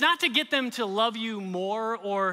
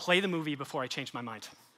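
dry, flat deadpan, very low; 7 semitones lower, 6 dB quieter than usual. Retelling the wife's reply: imitating deadpan delivery. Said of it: "just straight, deadpan face and said".

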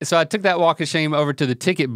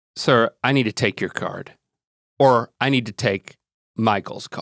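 flat deadpan delivery, lower pitch; 4 semitones lower than usual. Retelling what the employee said to him: imitating a blank-faced deadpan reply. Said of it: "The only thing she says with a blank face".

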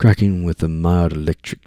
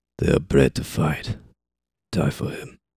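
quiet murmured voice; 3 semitones lower, 4 dB quieter than usual. Reading a novel aloud, voicing a character's line: murmured. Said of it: "Avril murmured".

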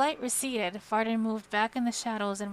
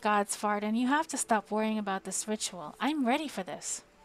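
ordinary delivery, nothing marked

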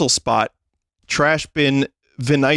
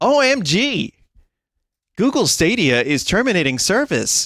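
pitched-up app text-to-speech read-out; 5 semitones higher than usual. Retelling news heard from the television, in the TikTok text-to-speech voice. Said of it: "it's in the TikTok voice".

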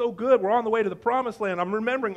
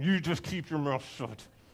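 spoken through clenched, gritted teeth; 7 semitones lower, 7 dB quieter than usual. Retelling Moses telling the people to keep quiet: through clenched teeth. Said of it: "I imagine he said it through clenched teeth".

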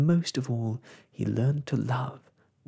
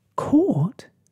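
shrill, very high, very loud gasp; 13 semitones higher, 9 dB louder than usual. Told that his friend has been caught, he answers, gasping. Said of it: "gasped Snugglepot".

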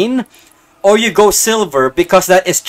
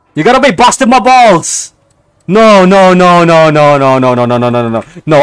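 panicked, louder; 5 dB louder than usual. Browsing a car auction when the wanted car is gone: panicking. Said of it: "I'm panicking".

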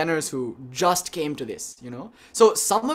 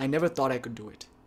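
soft, humble voice, lower and quieter; 3 semitones lower, 6 dB quieter than usual. Retelling what a meditator said after finishing: imitating a soft, humble voice. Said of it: "it's very soft and very humble".

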